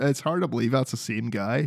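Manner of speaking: ordinary talk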